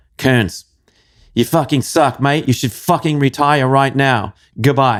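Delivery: put-on gruff Australian accent. Retelling a friend's calls after his races: imitating Peter, gruff Aussie. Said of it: "he had a gruff way about him".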